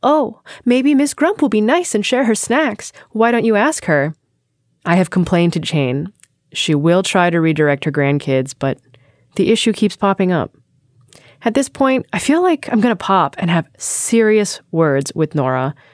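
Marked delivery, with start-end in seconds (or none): 0.0-4.1 sweet, sugary, pitched-up, sing-songy coaxing tone. Reading a letter that quotes a coworker: imitating a sing-songy sugary tone. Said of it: "She does it in this sing-songy, sugary tone".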